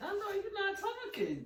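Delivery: mock outraged squeal.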